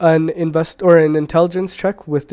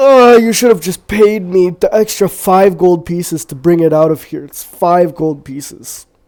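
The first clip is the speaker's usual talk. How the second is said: loud, lazy yawning drawl, words stretched out; 2 semitones higher, 7 dB louder than usual. Game master voicing a character who stretches and yawns while answering: yawning while speaking. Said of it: "he stretches and he yawns and goes".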